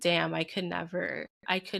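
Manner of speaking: usual speaking voice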